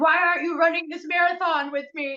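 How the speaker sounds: put-on, high-pitched, screaming, demanding tone. Retelling a heard metaphor, acting out the line: imitating someone screaming. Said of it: "you're screaming at them".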